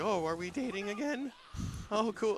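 stunned, flabbergasted surprise, very high pitch. Retelling a character's reaction to being called her boyfriend: imitating someone flabbergasted. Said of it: "he's all, like, flabbergasted".

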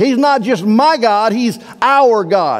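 my pitched high, our slow, set in contrast.

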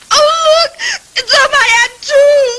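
slow, drawn-out, weepy, tearful whining. Speaking up to the one who refused to call the police, whining. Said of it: "don't whine".

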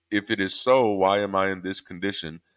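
ordinary delivery

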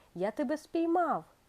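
joyful, high cry of delight. The king, finding Time on the pendulum, cries out: joyful exclamation. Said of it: "радісно вигукнув король і простягнув руки".

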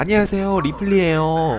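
high, put-on, sweetly polite customer-service voice. Voicing a game protagonist greeting NPCs in a put-on hospitality voice. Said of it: "접대용 목소리를 낸거죠".

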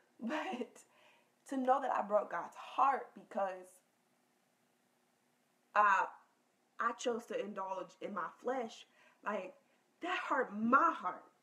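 fighting off crying mid-sentence, holding back tears. Sharing a personal confession about feeling they let God down: trying not to cry. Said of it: "I'm trying not to cry".

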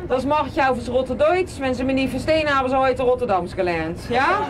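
German spoken in a broad Rotterdam accent.

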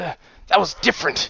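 squeezed through a choking throat. Ginger's father answers her outburst, choked out. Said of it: "her father managed to choke out".

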